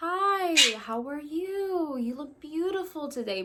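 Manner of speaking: gentle, calm, soothing delivery. Showing how to talk to a newly arrived bird: speaking softly. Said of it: "Speak to them softly".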